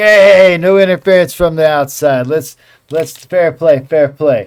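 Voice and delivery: agitated, upset troll voice, high and loud. Narrating a scene, the speaker voices a troll turning to the crowd in an upset troll voice. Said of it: "he seems upset about it".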